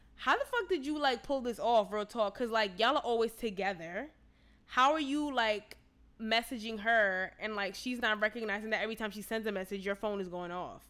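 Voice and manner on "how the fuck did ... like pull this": plain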